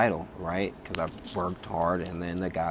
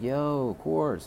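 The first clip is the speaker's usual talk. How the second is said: mock yelling, much higher pitch; 8 semitones higher than usual. Telling a story, the speaker acts out someone calling out to them: retelling a yell. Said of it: "Yells like".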